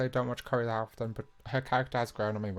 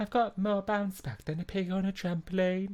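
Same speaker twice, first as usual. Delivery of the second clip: put-on Brummie accent, pitched up; 8 semitones higher than usual. Trying a character impression that drifts into a brummie accent. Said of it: "I don't know why I went Brume".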